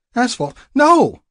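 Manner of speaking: sharp, very high, loud, snapping retort. Held in the narrator's arms, she snaps back at him. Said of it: "she snapped".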